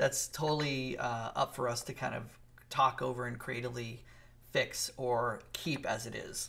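ordinary delivery

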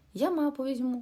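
cheered-up, upbeat tone. Reading Timi's line to Rasmus before they set off into the swamp forest, perking up. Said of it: "збадьорився Тімі".

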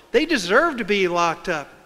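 ordinary talk

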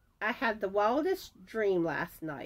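usual speaking voice

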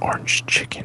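sensual, breathy, sultry whisper. Saying a dish name to the others: sensual whisper. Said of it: "just a very sensual whisper of orange chicken".

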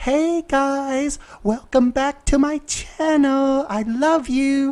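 soft, hushed, slow ASMR-style voice. Imitating a fellow creator's pleasant channel intro: imitating a soft ASMR-like intro. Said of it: "almost like A S M R pleasant".

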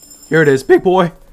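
very loud, voice breaking with excitement. Reacting as a 5-star pull appears, voice cracking. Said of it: "Voice cracking".

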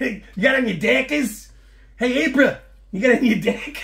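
bad fake New Zealand accent. Joking about people in New Zealand wearing dockers, bad New Zealand accent. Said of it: "My accents are horrible".

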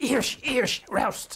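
put-on loud, angry German-accented shout.

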